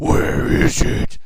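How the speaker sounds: very loud, hard, raspy voice. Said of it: "he just has this raspy voice sometimes".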